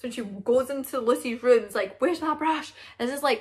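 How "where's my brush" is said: mock high-pitched argumentative tone. Retelling the sisters' argument over a lost brush: imitating a sister arguing. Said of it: "they were starting arguing".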